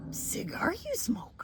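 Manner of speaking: breathy, half-whispered, barely voiced. Answering a request to do Yoda: Yoda voice. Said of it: "Could you Yoda?".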